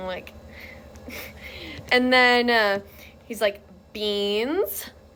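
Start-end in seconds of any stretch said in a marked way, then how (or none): 3.9-4.9 mock condescending tone. Retelling how a man kept talking to her, mimicking a condescending tone. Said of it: "he starts talking to her so condescendingly".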